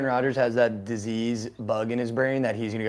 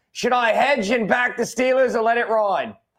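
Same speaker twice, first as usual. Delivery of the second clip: very high, loud, put-on Australian accent; 12 semitones higher, 7 dB louder than usual. Reading a viewer's message from Australia aloud: Australian accent. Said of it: "rate the Australian accent".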